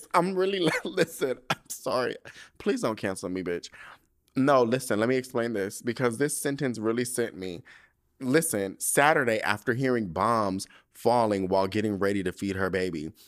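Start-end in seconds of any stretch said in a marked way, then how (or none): 0.1-3.7 giggly, laughing through the words, pitched up. Apologizing for laughing while reading a news headline, laughing while talking. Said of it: "I'm not laughing at this".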